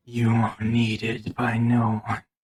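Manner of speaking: raspy, rasping voice. A caller answers the lawyer Tamara McNeil on the phone, in a raspy voice. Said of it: "You hear a raspy voice".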